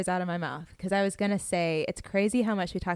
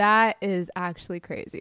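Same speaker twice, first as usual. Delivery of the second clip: ordinary delivery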